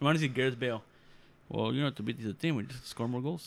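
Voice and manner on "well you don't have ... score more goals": put-on Portuguese accent. Quoting a footballer, in a Mourinho accent. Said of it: "I said it in such a Mourinho accent".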